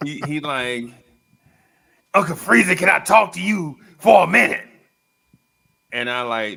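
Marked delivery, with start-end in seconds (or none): 2.1-4.6 booming preacher voice, very loud. Retelling what the preacher asked him one time: imitating the preacher. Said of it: "this preacher asked me one time".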